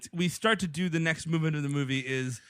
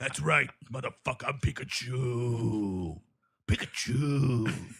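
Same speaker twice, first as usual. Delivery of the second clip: low, very slow, drawn-out, dragged delivery; 5 semitones lower than usual. Pitching a joke movie cast, playing Pikachu: David Caruso as Pikachu. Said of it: "David Caruso is Pikachu".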